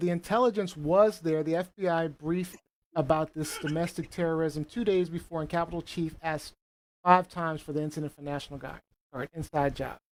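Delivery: ordinary delivery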